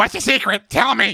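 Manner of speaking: put-on very high, squeaky, bratty teenage voice. Describing a villain's voice from the sky, like a 14-year-old Call of Duty player. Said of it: "speaks like a 14 year old call of duty player".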